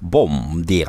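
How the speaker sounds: Russian-sounding accent. Speaker practises saying the portuguese greeting, landing in a russian accent. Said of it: "C'est du russe".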